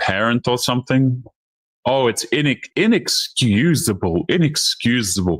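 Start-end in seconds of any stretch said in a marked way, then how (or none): 1.9-5.4 prim, slow, lecturing schoolteacher scolding tone. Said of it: "Notice how she's talking like".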